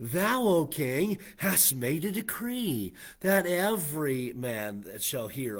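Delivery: put-on cynical, sneering, mocking sarcasm, slow. Picturing the Chaldeans coming before the king: mock-sarcastic. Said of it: "very cynical and mockingly uh, and sarcastically".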